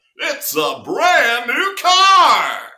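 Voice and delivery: booming, high announcer call, car drawn out long. Show the impression you have done since you were a kid, in a Don Pardo announcer voice. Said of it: "Don Pardo did all the announcing".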